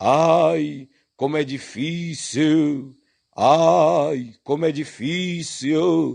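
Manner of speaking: slow, drawn-out, anguished wail.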